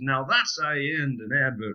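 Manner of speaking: excruciatingly poor, fake American accent. Retelling an advert, quoting the american sales guy in an excruciatingly poor american accent. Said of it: "Apologies for my excruciatingly poor American accent".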